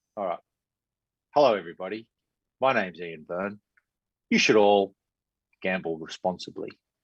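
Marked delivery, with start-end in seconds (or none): 1.3-6.7 public service announcement announcer style. Taking over the sign-off and betting reminder, like a public service message. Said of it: "sound like one of those public service messages?".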